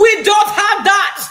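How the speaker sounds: put-on very high, very loud, botched Jamaican accent. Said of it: "not the right accent".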